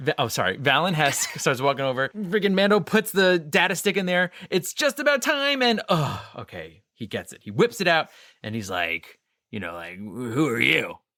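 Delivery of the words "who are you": eerie, unsettling, creepy put-on character voice. Retelling a Mando scene, voice a character's question in a weird creepy voice. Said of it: "he has this weird, creepy voice".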